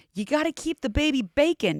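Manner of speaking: mock hollering yell in a Southern accent. Retelling a TV show scene, imitate the mom yelling at her pregnant teen daughter. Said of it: "the mom yells".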